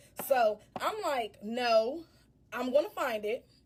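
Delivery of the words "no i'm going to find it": mock very slow, drawn-out, firm, stern delivery. Retelling her own refusal on the phone to the caller: retelling her own stern reply. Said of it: "I'm being stern".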